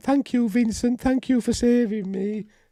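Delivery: very high, guileless, all-innocent voice. Retelling what the character says once she calms down: imitating an innocent voice. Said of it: "she's all innocent".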